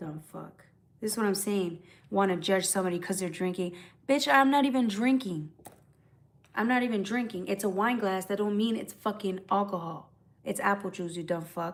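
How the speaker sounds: irritable, cranky, cursing rant. Answering a viewer's comment about drinking from a wine glass: cranky. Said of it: "I start getting a little cranky".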